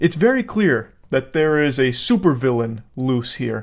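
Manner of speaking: ordinary talk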